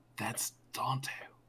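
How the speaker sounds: whispering in character. Voicing a character who shares a big revelation: whispering in character. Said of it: "goes over to whisper to you".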